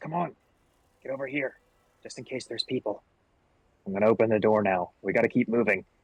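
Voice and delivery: hushed, quiet whisper. In a tabletop game, a player's character urges the others to follow: whispering. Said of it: "I'll kind of whisper to the rest".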